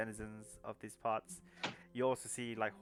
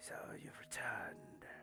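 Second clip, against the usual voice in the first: cold, chilling, breathy whisper; 9 dB quieter than usual. Voicing a figure on a pale horse greeting returning players: chilling voice. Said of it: "it speaks to you guys with the same chill in its voice".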